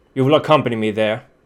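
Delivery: echoing armored voice. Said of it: "the voice of whoever's inside".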